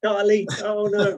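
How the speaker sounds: high, loud mock horror.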